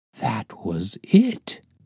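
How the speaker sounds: words said with audible awe. Narrating a story, a character reacts to a word written in blood, awe-struck. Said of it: "said Lestrade in an awe-struck voice".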